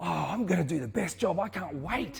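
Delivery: high, bubbling, eager, excited gush. Retelling how a man rang her up, imitating someone excited. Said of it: "He's so excited".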